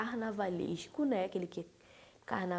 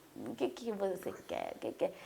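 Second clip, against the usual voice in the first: soft, hushed put-on voice. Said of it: "É o Renato, né?".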